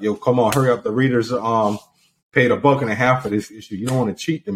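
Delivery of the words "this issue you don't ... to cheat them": normal talking voice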